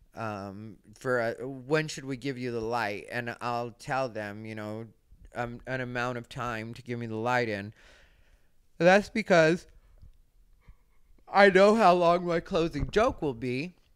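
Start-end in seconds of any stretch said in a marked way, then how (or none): 8.8-13.7 words stretched by very loud, pitched-up yawn. A performer explaining how long the closing joke will be, yawning while talking. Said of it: "sorry, I'm yawning".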